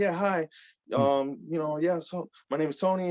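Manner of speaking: put-on business phone voice. Recalling being on the phone with people behind the scenes, in a professional phone voice. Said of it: "putting on my professional voice".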